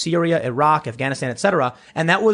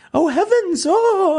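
put-on very high, fluttery, flustered panic; 4 dB louder than usual. Retelling how the elites reacted when Trump stormed in: imitating panicked elites. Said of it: "they were freaking out".

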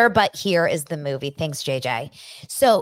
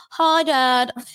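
higher, mocking put-on voice; 6 semitones higher than usual. Speaker mocks how a character sounded in a scene with her dad, mocking Angie's voice. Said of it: "Angie's voice, like".

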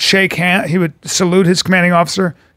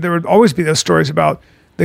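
normal talking voice

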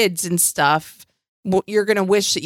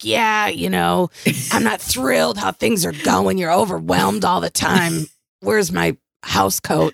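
put-on woman's rasp, rough and creaky smoker voice. Voicing how an imagined woman talks, do a chain-smoking woman's voice. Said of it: "picture her stubbing out cigarettes and lighting them".

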